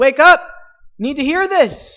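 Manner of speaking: sudden, high-pitched, loud, excited shout. A preacher shows how he suddenly breaks a monotone sermon: sudden excited outburst. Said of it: "the preacher gets excited about it".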